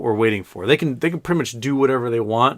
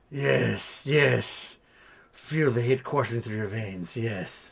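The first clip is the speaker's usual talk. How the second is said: sinister villain voice, quieter; 7 dB quieter than usual. Speaking for a dog in a blanket, doing her Emperor Palpatine impression. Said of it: "her Emperor Palpatine impersonation".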